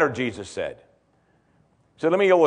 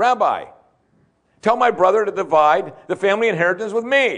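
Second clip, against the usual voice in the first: higher-pitched, yelling male voice. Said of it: "Someone just yelled out".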